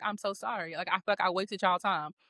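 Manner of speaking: fake tearful voice. Retelling apologizing while checking out, speaker imitates own crying apology. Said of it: "I'm literally sitting there crying".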